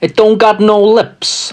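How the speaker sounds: put-on wise guy accent. Trying out accents on the same line, the speaker does a wise guy accent. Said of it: "And Wise Guy".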